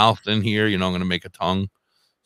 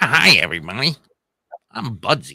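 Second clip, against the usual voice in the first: slow, drawn-out puppet voice with swooping pitch; 3 semitones higher than usual. Trying a different voice for the puppet Budsy: new Budsy puppet voice. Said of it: "come up with a different voice for him".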